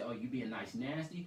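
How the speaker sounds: normal talking voice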